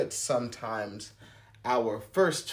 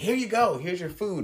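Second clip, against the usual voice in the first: mock irate, nasty yell, higher; 7 semitones higher than usual. Retelling how a server called out an order: imitating an irate yell. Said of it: "they yelled across the restaurant in a nasty tone".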